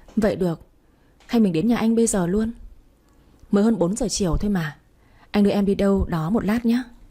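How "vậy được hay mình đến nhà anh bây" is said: plain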